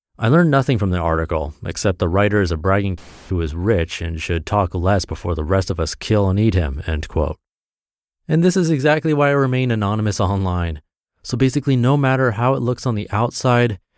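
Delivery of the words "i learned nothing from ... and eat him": ordinary talk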